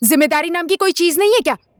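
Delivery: ordinary delivery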